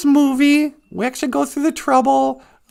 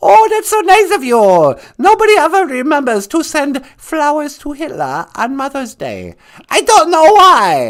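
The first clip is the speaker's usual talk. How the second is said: comic caricature voice, pitch swooping, sing-song; 6 dB louder than usual. Playing a caller on a radio phone-in skit: Hitler voice. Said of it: "Hitler, you're on the air".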